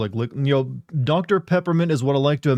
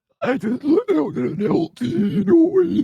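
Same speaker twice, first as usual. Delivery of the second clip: very high, drawn-out, put-on ailing sickly voice. Showing the unhealthy noise just made: put-on cancer victim voice. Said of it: "I just do my cancer victim voice".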